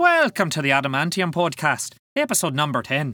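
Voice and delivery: bad put-on Irish accent. Welcoming listeners to the podcast episode for Saint Paddy's Day: crappy Irish accent. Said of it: "There is a crappy Irish accent for you".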